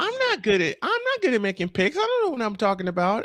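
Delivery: playful teasing put-on voice. Teasing a fellow picker about her claim: playful imitation of her. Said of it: "I can't find the sound I'm looking for, but I'll go with this".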